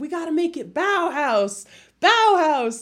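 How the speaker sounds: put-on yell. Retelling how a drunk character yells at his assistants: imitating someone yelling. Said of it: "he's yelling at his assistants and he's like".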